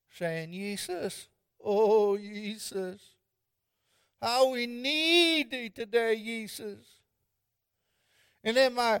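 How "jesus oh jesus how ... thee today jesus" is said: put-on Swedish accent. Recalling a great-grandmother praying in her rocker, doing great-grandma Vanderbilt's Swedish accent. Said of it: "praying away in her Swedish accent".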